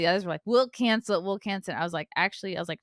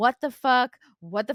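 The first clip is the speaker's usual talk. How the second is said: put-on stunned, disbelieving, shocked screaming outburst, breaking off; 4 semitones higher than usual. Retelling reacting to horrible news by screaming at her, retelling screaming at someone. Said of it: "I was yelling, screaming at her".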